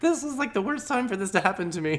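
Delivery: very high, high-strung, panicked whine.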